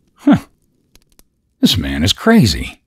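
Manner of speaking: loud, swooping, exclaimed delivery. Harry reacts to Riley's answer about his bicycle, exclaiming. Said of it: "Harry exclaimed".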